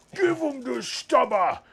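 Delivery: very high-pitched Cockney soldier voice. Rolling dice for a stubber attack, quoting in a Cockney Cadian voice from Dawn of War. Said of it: "the Cockney Acadian voice from Dawn of War".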